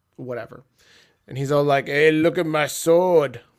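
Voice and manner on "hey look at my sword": loud, slow, drawn-out booming promo voice. Joking about a wrestler's sword promos: Drew McIntyre impression. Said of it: "my best Drew McIntyre impression".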